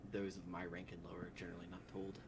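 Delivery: ordinary delivery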